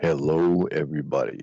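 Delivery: low, deep on-air radio announcer voice. Introducing herself and her co-host, the host greets everybody in a radio voice. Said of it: "Ooh, radio voice".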